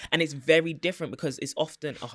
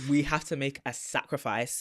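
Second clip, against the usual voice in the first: ordinary talk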